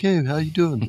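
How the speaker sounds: super friendly nice-guy voice, way up high. Show how the wrestler normally talks, in Triple H's super nice guy voice. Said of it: "he just has this super nice guy voice".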